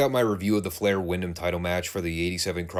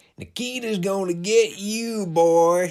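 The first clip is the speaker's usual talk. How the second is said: put-on Southern accent, very high-pitched, very slow drawl; 13 semitones higher, 4 dB louder than usual. Retelling a fan's shout at the wrestler: imitating a Southern redneck fan. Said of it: "that accent on top of that particular line".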